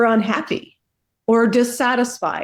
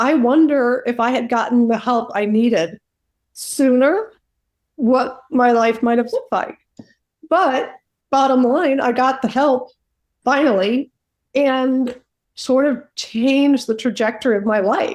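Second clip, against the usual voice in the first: emotional voice, tearful, crying while speaking; 2 semitones higher than usual. Looking back on their life and getting emotional, crying while speaking. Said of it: "I guess I'm crying".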